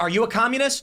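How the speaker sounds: loud shouting, yelled. Acting out a stranger in the woods: imitating someone yelling. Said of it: "he yells back".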